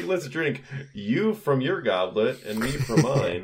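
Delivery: slow, high, put-on, extremely sarcastic drawl. Quoting a movie character who switches the goblets: imitating a sarcastic movie line. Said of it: "it sounds as sarcastic as possible".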